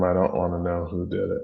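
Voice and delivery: ordinary talk, nothing marked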